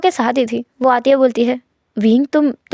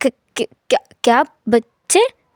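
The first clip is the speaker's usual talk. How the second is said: mock-shocked, stunned stammering, slower; 2 semitones lower than usual. Speaker retelling how a man reacted when totally surprised, imitating a shocked stammer. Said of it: "वो एकदम हैरान हो गया था".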